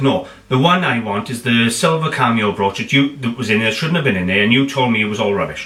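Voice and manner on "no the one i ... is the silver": ordinary delivery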